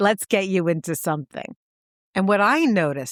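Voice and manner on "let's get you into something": put-on heavy New York accent. Retelling a film scene where a saleswoman speaks: heavy New York accent. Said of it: "who says in a heavy New York accent".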